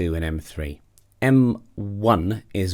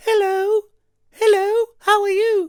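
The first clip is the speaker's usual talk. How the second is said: put-on very high, raised, childlike falsetto small-child voice; 5 dB louder than usual. Vocal register lesson, demonstrating M two with a small child voice. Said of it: "M two is if I was to try and imitate a small child".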